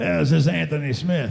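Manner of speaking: gruff, rough, lifelong-smoker's voice. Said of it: "this gruff voice, you know, somebody who's been smoking for sixty years".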